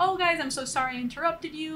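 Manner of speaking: ordinary delivery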